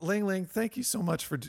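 choked-up, voice catching, pitched very high. Thanking the other speaker for doing this: a little choked up. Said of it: "got a little choked up".

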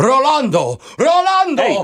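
very high, shrill shrieking, repeated. On the phone with a husband, imitating his wife: imitating a wife screaming.

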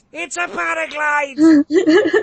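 put-on nerdy screaming. Imagining nerds correcting the name of the camera: imitating nerds screaming. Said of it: "I could hear every nerd screaming at me".

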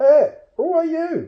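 very shrill, very loud, very high squeak. Narrator reads a troll's purse speaking as it leaves the pocket, squeaky voice. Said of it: "it squeaked".

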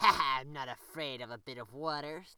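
loud, snickering, sniggering through the words. The fox answers Uncle Wiggly's pointed magic gun, snickering. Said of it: "snickered the fox".

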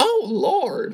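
high, shaky, rough cartoon mom voice. Retelling a comedy club bit, doing Marge Simpson voice. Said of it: "I don't have a good Simpsons voice".

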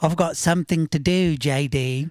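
put-on English accent. Recalling trying to get James to come play, imitating James, English accent. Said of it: "we just imitated an English".

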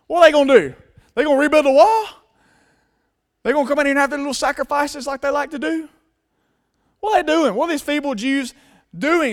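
high, rapid-fire, openly mocking put-on taunts. Retelling how the enemy openly mocked the builders, imitating mocking taunts. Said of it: "openly mocking them".

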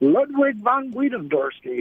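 giggling through the words. Saying a co-host's full name aloud, laughing while talking. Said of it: "I can't say it without laughing at you".

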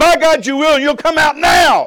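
very high, very loud shrieking scream. Telling a story, the speaker recalls shouting back at a man's voice: retelling a scream. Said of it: "I screamed right back at him".

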